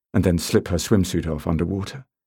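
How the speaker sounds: plain reading voice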